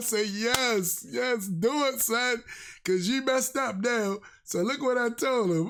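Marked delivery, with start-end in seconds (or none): 0.3-4.2 thrilled, excited, slow, drawn-out, relishing each word. Retelling own reply to a commenter: retelling an excited reply. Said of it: "I was excited".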